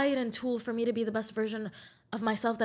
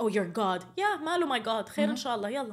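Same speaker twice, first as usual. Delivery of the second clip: put-on smug, derisive, arrogant mocking tone. Imitating how atheists mock believers about God: mimicking an arrogant mocking tone. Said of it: "in the arrogant and mocking tone of like".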